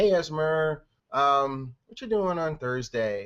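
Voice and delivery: slow, flat tone without excitement or urgency. Demonstrating the wrong way to ask someone about Thursday, without excitement or urgency. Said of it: "I'm not".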